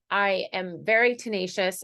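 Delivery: ordinary delivery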